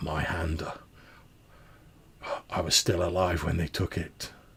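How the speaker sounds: rough, gruff ghostly voice, half to itself. Something talks aloud to itself as a character moves closer, in a gruff voice. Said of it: "you hear this gruff voice that says".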